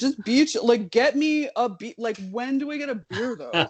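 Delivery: easygoing, chill frat bro voice. Discussing a court dissent, the speaker mocks Justice Kavanaugh in a frat bro voice. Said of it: "reading that dissent as frat bro".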